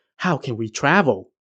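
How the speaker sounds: plain reading voice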